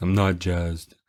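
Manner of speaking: mopey, downcast, sad, gloomy tone. Joking about not being jazzed, in a sad voice. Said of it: "I'll get sad face and sad voice".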